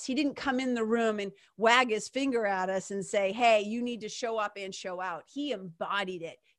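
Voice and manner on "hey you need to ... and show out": ordinary talk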